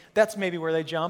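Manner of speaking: ordinary talk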